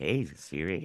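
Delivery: very low, sultry, seductive voice. Complaining a voice assistant does not understand them, in a put-on sexy voice. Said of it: "give it my sexy voice and go".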